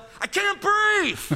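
put-on very high, shrill little-kid yell. Recalling what a little brother always yelled whatever was done to him; imitating little brother yelling. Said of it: "he'd always just yell".

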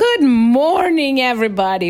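mock, acted-out cheerful yell. Retelling how a man greeted everybody as he walked in, retelling a yell. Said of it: "And he just yelled".

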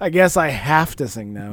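grudging, put-upon, reluctant sarcastic resignation. Mimicking another speaker's reluctant remark with a heavy eye roll: mocking with a heavy eye roll. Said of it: "he says with a heavy eye roll".

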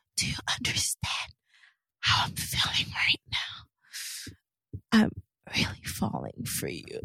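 soft, breathy, hushed whisper all the way through. Speaker complains about Rachel always whispering, imitating Rachel's whispering. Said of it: "What is up with Rachel always whispering?".

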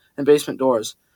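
ordinary delivery

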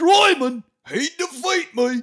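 shrill, booming belting, high, loud and slowly drawn out. Retelling a movie ending scene: Jason Statham impression. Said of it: "That's my Statham impression".

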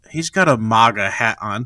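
normal talking voice

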